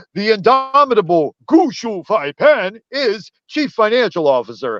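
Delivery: put-on Mandarin accent, pitched high. Recounting a man promoting a coin from China, the speaker quotes him in a mock Mandarin accent. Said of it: "he put on like a Mandarin accent".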